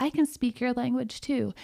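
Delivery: plain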